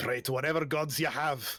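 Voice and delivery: very poor, badly done Scottish accent. Voicing a character about to winch four people down on ropes, in Durnan's very poor Scottish accent. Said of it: "in his very poor Scottish accent".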